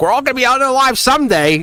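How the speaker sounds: very loud, very high exclamation. Retelling saying it to him so loud that people started looking, very loud. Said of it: "I say it wicked loud".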